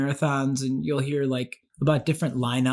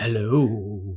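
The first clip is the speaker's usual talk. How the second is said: spooky, creepy, put-on, drawn-out delivery; 5 semitones lower than usual. Greeting a spouse before the last Halloween movie, creepy voice. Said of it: "I'm using my creepy voice".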